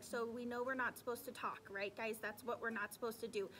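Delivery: plain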